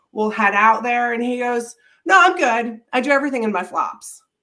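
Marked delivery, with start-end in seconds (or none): 2.1-4.2 put-on man's New Jersey accent. Retelling what Lou said when asked to change his shoes: Lou's New Jersey accent. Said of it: "He's got this New Jersey accent".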